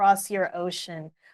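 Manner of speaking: usual speaking voice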